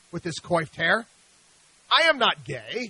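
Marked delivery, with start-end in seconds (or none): 1.9-2.9 put-on deliberate German accent, very slow and drawn out. Retelling Siegfried's reply to the speaker's quizzical look, in Siegfried's German accent. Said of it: "he said in his German accent".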